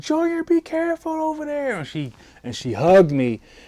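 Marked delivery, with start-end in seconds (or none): 0.0-1.8 mock shrill screaming, very high. Retelling a mother's goodbye at the airport, imitating her screaming. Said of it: "she's screaming".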